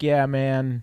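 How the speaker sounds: usual speaking voice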